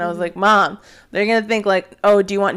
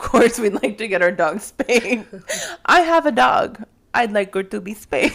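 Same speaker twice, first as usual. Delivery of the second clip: faked, put-on Indian-sounding accent; 2 semitones higher than usual. Speaker redoes own words from a recording, in a put-on Indian accent. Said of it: "You're talking like Indian now".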